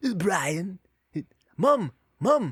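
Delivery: put-on high-pitched cartoon baby voice. Showing the one line they can do, in the Stewie voice. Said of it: "That's the only thing I could say in the Stewie voice".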